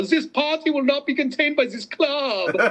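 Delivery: very high, put-on German party-boy voice. Showing the second german accent from the joke: german party boy accent.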